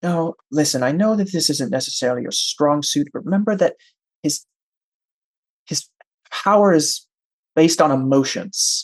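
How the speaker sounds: low, hushed, close-in quiet voice. A game master voices Angel walking up to the player: Angel speaking more quietly. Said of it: "more quietly says".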